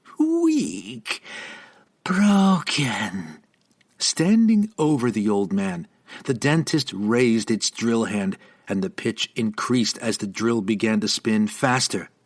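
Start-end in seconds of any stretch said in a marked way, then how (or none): 0.2-3.4 high, swooping, sibilant hissed words. Narrator reading the dentist taunting a fallen old man, hissing. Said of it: "the dentist hissed through the impossibly wide grin".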